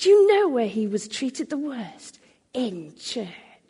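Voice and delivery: bitter, venom-laced, swooping delivery. Quoting a customer's repeated question, retelling words said with venom. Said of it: "he said it with such venom".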